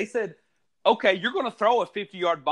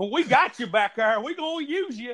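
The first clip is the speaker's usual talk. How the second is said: put-on old country voice, pitched higher; 5 semitones higher than usual. Imitating a coach reassuring his player: Dabo Swinney old country voice. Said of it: "in his old country voice".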